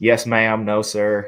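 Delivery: very slow Southern American drawl. Showing off a twang in short polite replies: Southern American twang. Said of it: "you got the twang down".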